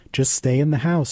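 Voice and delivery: ordinary talk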